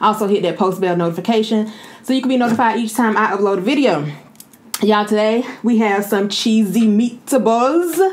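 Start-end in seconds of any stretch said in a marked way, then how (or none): 5.0-8.0 slow, fake Italian accent, laid on thick. Introducing today's dish in a video, put-on Italian accent. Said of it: "That was my Italian accent".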